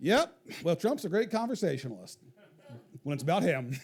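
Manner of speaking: acted-out bone-dry, deadpan understated delivery. Retelling what someone said on a phone call after a meeting, imitating a deadpan delivery. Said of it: "deadpan says".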